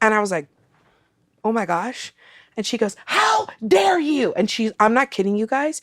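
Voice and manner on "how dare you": shrill, high-pitched, furious shouting. Retelling a woman from the speaker's flight confronting her; imitating a woman shouting.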